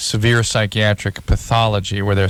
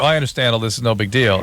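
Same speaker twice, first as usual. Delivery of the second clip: ordinary talk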